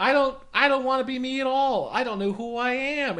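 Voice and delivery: put-on very high small child's little girl voice. Retelling her answer when asked what she's supposed to be, in a little girl's voice. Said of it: "she just has like a little girl's voice".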